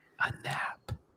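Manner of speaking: hushed, very soft secretive whisper. Revealing a magical word someone told them about: whispered. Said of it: "I'm gonna whisper it".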